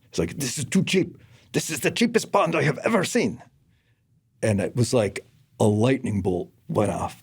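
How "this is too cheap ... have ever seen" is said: put-on Russian accent, pitched up. Quoting a younger guy who worked for the speaker; russian accent. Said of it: "he's had a Russian accent".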